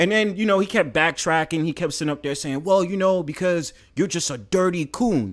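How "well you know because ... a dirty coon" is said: rough, put-on British accent. Retelling what a man in an argument kept saying: imitating a rough uk accent. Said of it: "saying it in his, like, rough, like, U K accent".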